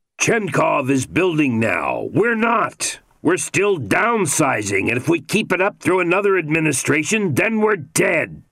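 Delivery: voice climbing toward anger. A man presses his case to a listener, voice rising almost in anger. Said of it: "Teddy's voice rose almost in anger".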